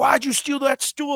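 put-on, high-pitched, accusing screaming yell. Retelling a security guard screaming at him over a stolen stool; imitating someone screaming. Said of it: "he's like screaming at me".

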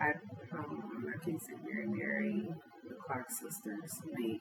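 very soft, muttered whisper. Listing favorite gospel artists while thinking aloud: whispering to herself. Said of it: "You whispering to yourself?".

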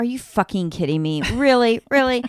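disbelieving, outraged cry. Retelling yelling at the tv during a thriller: retelling screaming at the tv. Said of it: "we're yelling at the T V, screaming".

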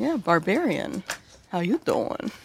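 cheeky, flirty tone in character. Voicing a scuffed-up character approaching a barbarian: flirty in-character greeting. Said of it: "kinda dirties her hands and kind of approaches them and goes".

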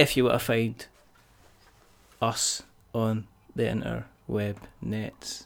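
slow, clipped, staccato, separated syllables. Telling people where to find them online: slow, staccato delivery. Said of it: "I'm saying it slowly in a staccato voice".

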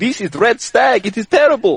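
put-on Middle Eastern accented speech. Retelling a liquor store clerk's reply: put-on Middle Eastern accent. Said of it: "I'm gonna give him one anyway".

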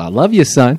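loud, high shouted yell. A podcast host yells to his son through thin walls: yelled. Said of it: "that's why I just yelled".

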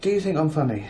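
quiet put-on boss voice. Retelling a quiet moment where Brent asks a question: quietly imitating Brent. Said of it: "And he goes".

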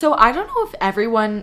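voice cracking. Starting a segment for the audience, voice cracking. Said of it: "Why did my voice crack?".

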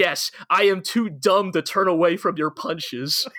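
cheerful, happy, proud tone. Acting out a dude's answer about not turning from punches: a happy, proud answer. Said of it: "happily and proudly answers".

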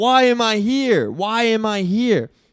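play-acted call-out, long, stretched and unhurried. Retelling what they shouted out back then, retelling a yell. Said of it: "And so I yelled out".

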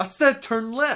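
very high, insistent, repeated delivery. Joining in, imitating a GPS voice done as Samuel L. Jackson: Samuel L. Jackson voice. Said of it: "Samuel L. Jackson being your voice for your G P S".

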